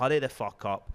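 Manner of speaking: put-on annoyed man's voice. Retelling a robbery, quoting the robber getting annoyed: imitating an annoyed man. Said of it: "He's getting annoyed with her".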